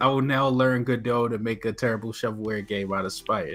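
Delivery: normal talking voice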